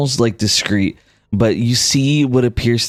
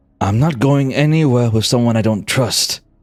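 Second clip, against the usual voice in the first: low grumbling mumbling. A character who almost says something else stops himself, muttering. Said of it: "he kind of mutters".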